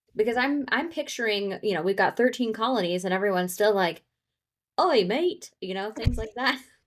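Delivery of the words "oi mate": high, put-on British accent. Picturing settlers in the thirteen colonies still talking: put-on British accent. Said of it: "do we think that everyone that came over to America all had accents".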